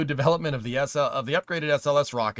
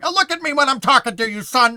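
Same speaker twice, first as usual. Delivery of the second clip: loud, shrill, barked delivery; 12 semitones higher, 9 dB louder than usual. Doing a line as a Jim Carrey impression of Bruce Dern. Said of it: "That's a Jim Carrey impression".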